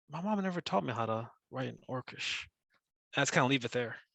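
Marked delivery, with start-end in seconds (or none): 0.1-2.4 quiet mutter under the breath, as an aside. Playing a character who looks away and speaks: muttered under the breath. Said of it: "I say under my breath".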